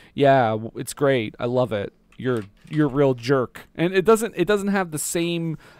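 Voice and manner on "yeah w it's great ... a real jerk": mock barbed, sarcastic, passive-aggressive niceness. Retelling what a film character tells the class: imitating passive-aggressive tone. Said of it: "passive aggressively".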